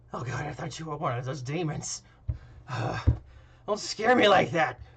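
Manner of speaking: put-on elderly old grandpa character voice. Voicing an old grandpa innkeeper startled by a guest: old grandpa innkeeper voice. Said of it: "the old grandpa innkeeper".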